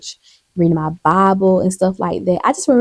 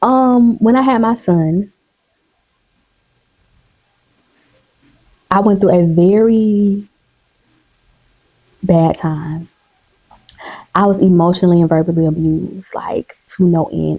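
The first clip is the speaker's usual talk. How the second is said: holding back tears. A parent tells their life story, holding back tears. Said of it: "I'm trying not to cry".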